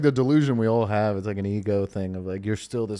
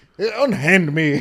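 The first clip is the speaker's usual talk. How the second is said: put-on raised, refined, distinguished-sounding posh accent; 7 semitones higher, 6 dB louder than usual. Describing a guy with a distinguished accent being a jackass, in a distinguished accent. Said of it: "someone with a distinguished accent being a jackass".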